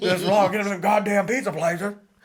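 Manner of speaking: mock old man loud cursing. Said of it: "the guy cussed real loud".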